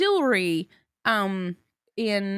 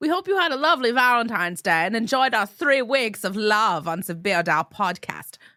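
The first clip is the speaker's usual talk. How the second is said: playful, joking put-on German accent; 3 dB louder than usual. Podcast host wrapping up the episode, in a joking German accent. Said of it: "I don't know why I'm talking like German now".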